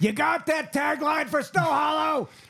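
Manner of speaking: very high, drawn-out, frazzled and stressed voice. Imagining someone who worked on the poster tagline: imitating a stressed-out tagline writer. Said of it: "had coffee and was stressed out".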